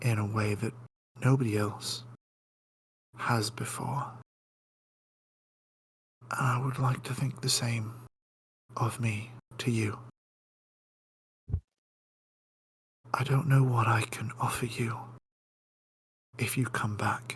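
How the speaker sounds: half-whispered voice. Playing a character leaning down to say something personal to another character, half-whispering. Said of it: "so I'm just going to whisper this one".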